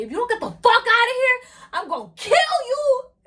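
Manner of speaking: raging, furious, very high and very loud. Speaker recounts threatening a lady who got on their nerves; retelling an angry threat. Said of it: "while I'm having this whole episode".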